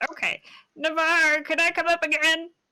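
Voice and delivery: very high, squeaky egg creature voice. A performer switching back into their egg character, in egg voice. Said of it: "Egg voice".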